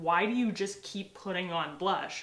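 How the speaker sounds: ordinary talk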